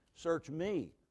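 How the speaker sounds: strong stress on the word me. Quoting a Bible verse to drive a point home, stress on me. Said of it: "use some voice inflection to drive a point home".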